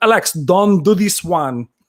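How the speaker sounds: put-on thick Belgian accent. Quoting a movie scene with a sweaty brother: Jean-Claude Van Damme accent. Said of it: "The way he spoke".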